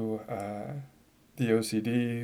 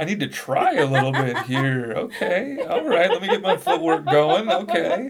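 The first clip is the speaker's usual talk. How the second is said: high, loud, eager laughing voice. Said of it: "I was gonna be like".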